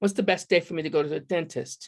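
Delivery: imitated British accent. Retelling a client's question, imitating a british client's accent. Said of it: "that's why I lapsed into a British accent".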